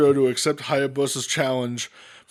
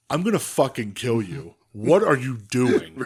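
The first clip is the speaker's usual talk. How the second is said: mock cool, calm, matter-of-fact menace; 2 semitones lower than usual. Retelling a wrestling moment in a calm Jun Akiyama voice. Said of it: "the calmest old man being like".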